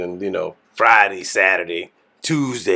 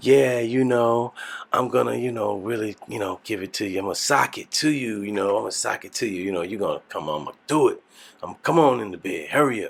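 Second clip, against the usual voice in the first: mock seductive, sexy voice; 2 semitones higher, 3 dB quieter than usual. Retelling how the wife spoke in bed: imitating her sexy voice. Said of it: "and then she put on the voice".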